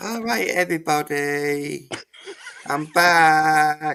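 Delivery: high, very slow, stretched-out announcing voice. Doing an impression of how a streamer's short stream went: imitating Dalek. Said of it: "this is my impression of how that stream went".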